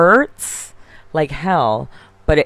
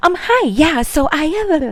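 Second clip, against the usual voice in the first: bubbly cheerleader voice, very high and slow; 13 semitones higher than usual. Imitating Laura calling in on the phone: imitating a high cheerleader-like voice. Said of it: "why do we sound like a cheerleader all of a sudden?".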